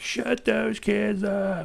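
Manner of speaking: very high, slow, rough, drawn-out shout. Retelling a neighbor yelling at kids playing outside: imitating a neighbor yelling.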